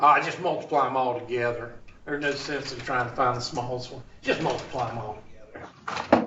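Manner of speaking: very low, hushed, ironic sarcasm. Explaining a common denominator problem, sarcastic. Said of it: "I was being sarcastic".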